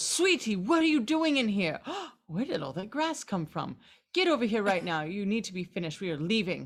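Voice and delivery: stern, scolding tone. Voicing a character who runs in and calls his cat away: scolding a pet tiger. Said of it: "he runs in and goes".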